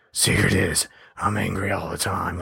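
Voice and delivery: slow, drawn-out, rough, creaky superhero voice. Discussing a superhero movie, speaker quotes a Hulk line; Batman voice. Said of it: "doing Hulk with the Batman voice".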